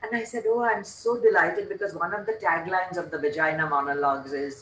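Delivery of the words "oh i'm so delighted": ordinary delivery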